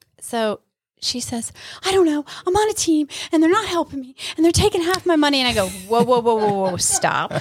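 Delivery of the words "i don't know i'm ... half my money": put-on panicked upset voice, much higher, faster. Quoting a woman who phoned in panic mode, imitating someone panicking. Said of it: "You sound so upset".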